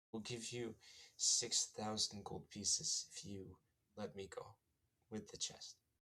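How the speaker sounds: whispered all the way through, soft and hushed. A character caught holding a chest speaks to her captor, whispering. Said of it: "she whispers".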